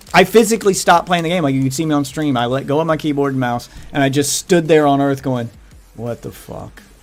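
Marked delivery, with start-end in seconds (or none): 5.9-6.8 sounding disappointed. Retelling stopping the game, standing still: retelling own disappointed reaction. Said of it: "so disappointed".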